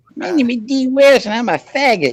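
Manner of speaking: very high-pitched, slowly spoken, drawn-out voice. Mocking a named person by imitating how his voice sounds: imitating D West's voice. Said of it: "that's how I hear his voice right now".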